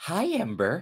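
creepy horror-style voice. Retelling how another speaker introduced herself: imitating a creepy Shining twin. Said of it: "like a creepy twin from The Shining".

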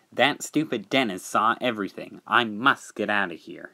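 plain reading voice

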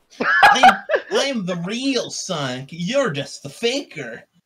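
very high, loud, swooping cartoon-style voice. Arguing over who is the real Sonic, a speaker does a Sonic impression. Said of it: "you doing your Sonic impressions".

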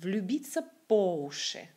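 stress on по, уши left light. Explaining a Russian idiom's stress in French, stress on по, not уши. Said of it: "cette expression se prononce comme écoutez".

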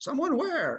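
very high, startled, caught-off-guard voice. Narrator voicing Xanthippus after Flavius whispers that someone is there: startled.

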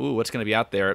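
ordinary talk

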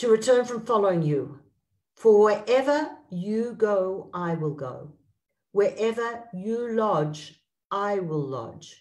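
slow, deliberate reading, each phrase unhurried. Reading a Bible verse aloud to listeners, slow reading. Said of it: "I'm going to read it slowly".

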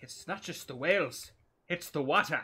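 loud, high-pitched, gamely attempted put-on Scottish accent. Gamer trying out an accent while playing, scottish accent. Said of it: "That's my Scottish accent".

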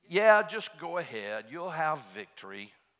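mock sarcastic at very loud volume. Retelling a prophet's answer to the king, retelling a sarcastic reply. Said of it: "he sort of sarcastically said".

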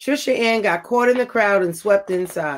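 ordinary delivery

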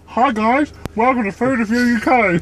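talking through unmoving lips. Opening a food review uk video, ventriloquist, lips not moving. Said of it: "Said that without moving my lips".

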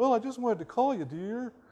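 high, whining, plaintive voice. Retelling a husband phoning his wife: imitating a whiny voice. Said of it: "He has this whine in his voice".

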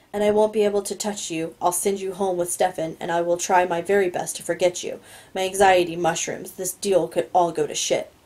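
ordinary delivery

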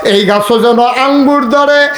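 impassioned, fervent preaching cry.

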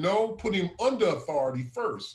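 ordinary talk

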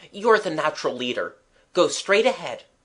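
ordinary talk

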